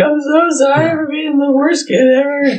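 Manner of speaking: put-on very high, tearful, big-baby crying voice. Retelling a first call home from a mission: retelling a tearful apology. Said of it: "a big baby and just crying and be like".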